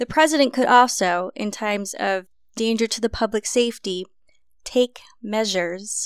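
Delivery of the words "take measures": wry, ironic tone with audible air quotes. Describing what a president could do in times of danger: air quotes around "take measures". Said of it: "I don't know if you heard the air quotes in my voice there".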